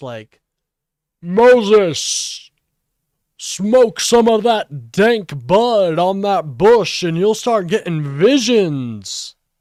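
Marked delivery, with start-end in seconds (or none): 1.2-9.3 very loud, booming, pitched-up divine voice from above. Joking about doing fun voices, the speaker demonstrates a God voice. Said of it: "I could have a God voice".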